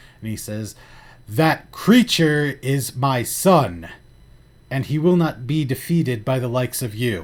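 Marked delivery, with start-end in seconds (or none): 1.3-7.2 voice booming out loudly, like a proclamation. Game master voicing a character who addresses the two players; booming loud voice. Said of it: "his voice booms so loudly".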